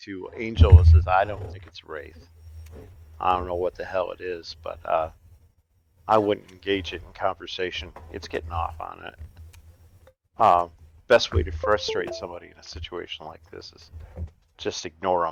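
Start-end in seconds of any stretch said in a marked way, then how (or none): 1.1-15.3 quiet, soft-spoken delivery. As a game character, advising a companion about a creature: soft voice. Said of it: "says soft in a soft voice".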